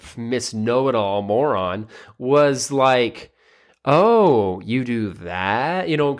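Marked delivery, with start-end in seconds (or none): 3.9-5.9 mock condescending, skeptical tone, much slower. Retelling what a young woman said to another woman, mock-condescending questioning tone. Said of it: "question it with like a tone in her voice".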